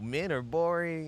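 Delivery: dry mocking tone. Retelling what a manager said: imitating sarcastic remark.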